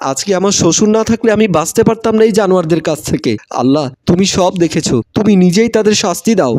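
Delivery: ordinary delivery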